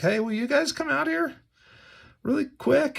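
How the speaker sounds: very high, confused, concerned, bewildered, acted. Acting out the king asking the men to come out: Nebuchadnezzar sounding bewildered and concerned. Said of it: "He's a little bewildered, maybe confused".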